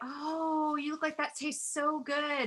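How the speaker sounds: sugary sweet, high, honeyed voice. Answering the host, [name] acts out what she says outside: really sweet. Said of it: "I just get really sweet".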